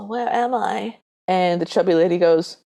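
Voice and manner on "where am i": feeble, very weak, faint, barely audible voice. Retelling a scene where a sick prince wakes: very weak voice. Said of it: "very weakly says".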